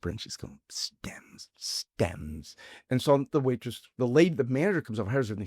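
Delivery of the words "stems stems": angry, fuming, hushed whisper under the breath. Retelling the sister-in-law at an Italian restaurant, imitating someone whispering. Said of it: "And she's just whispering".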